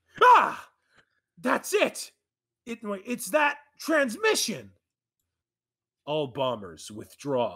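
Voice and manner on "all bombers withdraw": low, cool, commanding villain voice. Playing the real Schmerman in a scene, using a cool Schmerman voice. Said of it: "I'm doing a cool voice for the real Schmerman".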